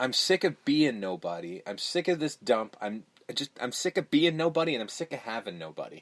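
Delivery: earnest, dead-serious movie-drama delivery. Recapping a film scene where a character gets really serious: mock-serious dramatic tone. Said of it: "gets really fucking serious".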